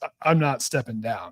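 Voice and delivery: ordinary talk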